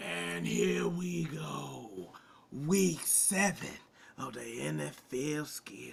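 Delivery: hyped, put-on showman announcer voice, "go" drawn out long. Opening a rundown of the week's NFL schedule: put-on pumped-up voice. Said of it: "I don't know why I did that voice".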